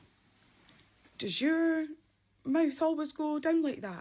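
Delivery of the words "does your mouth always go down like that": high, loud, shocked voice. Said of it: "she was like".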